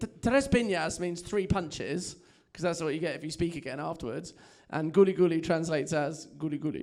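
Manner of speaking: ordinary talk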